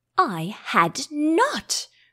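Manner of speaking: furious, sharp, very angry cry with swooping pitch. Narrator reading the Mouse answering Alice, sharp and very angry. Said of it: "cried the Mouse, sharply and very angrily".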